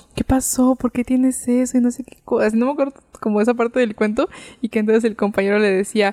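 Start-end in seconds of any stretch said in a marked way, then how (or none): 0.2-1.8 secretive, worried, confiding tone. Retelling how mom told a scary story, imitating a lowered, hushed voice. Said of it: "así empezó a bajar la voz".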